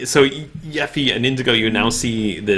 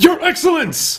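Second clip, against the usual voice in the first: very high, shrill yelled shout. Voicing Erhard, distracted, shouting toward the old man: Erhard shouting. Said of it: "he shouts".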